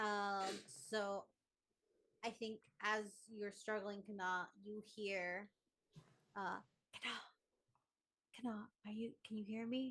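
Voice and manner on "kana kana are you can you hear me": fast, very quiet, barely audible whispered call. Calling out to kana after hearing her struggle: very quiet. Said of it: "very quiet".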